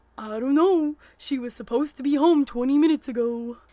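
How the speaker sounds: loud, booming put-on moose voice. Reading a defeated man's reply to a teenager, in his best moose voice. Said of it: "said in his best moose voice".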